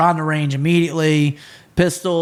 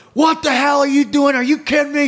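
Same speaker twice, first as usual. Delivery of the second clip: acted-out, in-your-face angry screaming; 10 semitones higher than usual. Retelling how he screamed at a woman who couldn't hit the target, imitating his own screaming. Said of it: "and I'm screaming at her".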